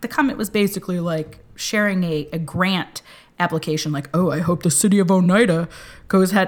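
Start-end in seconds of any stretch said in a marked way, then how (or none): 4.1-6.5 prodding, goading, needling raised voice. Speaker retells a stranger's prodding comment about a grant, imitating a prodding commenter. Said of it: "I'm doing it in this voice".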